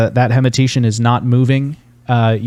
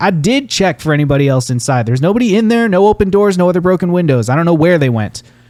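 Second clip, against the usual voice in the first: speaking up with voice raised, pitched high; 6 semitones higher than usual. Narrating a scene, voicing a man overheard by the staircase, raised voice. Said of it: "one of them raises his voice and goes".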